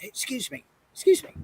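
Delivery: hushed, soft, breathy whisper. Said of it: "I heard kind of a whisper behind me".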